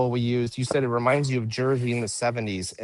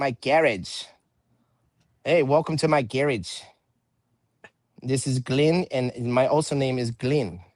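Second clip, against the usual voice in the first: put-on Australian accent, slow and drawn out. Host clowning around while making pizza, in a fake australian accent. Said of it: "Or maybe I'm from Australia".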